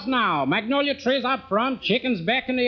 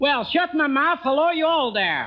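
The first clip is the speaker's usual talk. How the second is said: put-on fake American Southern accent; 3 semitones higher than usual. A character greets a man she didn't see come in, in a put-on southern accent. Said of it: "You'll have to pardon by me the southern accent".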